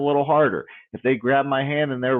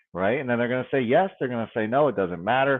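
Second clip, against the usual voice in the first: ordinary talk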